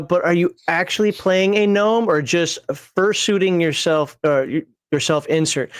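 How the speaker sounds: ordinary delivery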